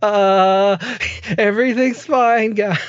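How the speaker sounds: very slow, high, drawn-out, wobbling panicked tone. Imitating a scared venue worker telling people everything is fine: imitating a panicked, wavering voice. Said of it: "their voices are all over the place".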